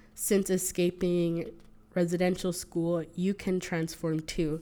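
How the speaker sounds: ordinary talk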